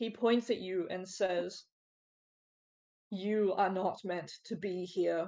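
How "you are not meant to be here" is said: cold, threatening, menacing intimidating tone. Voicing a figure who points at the intruders: intimidating tone. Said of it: "with an intimidating tone".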